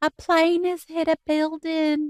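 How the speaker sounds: put-on heavy, thick Southern accent, pitched way up, very high. Recalling what a woman at a cotton seminar said, thick southern accent. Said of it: "she had this thick Southern accent".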